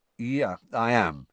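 ordinary delivery, nothing marked

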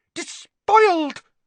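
shrill outraged hiss. She lunges at Harry's written-in book with a claw-like hand, hissing. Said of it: "she hissed".

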